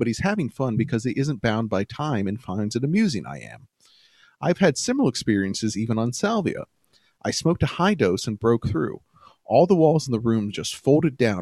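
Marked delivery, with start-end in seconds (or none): none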